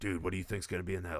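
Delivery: imitated whispering. Retelling what was said to a friend during a movie: retelling a whisper.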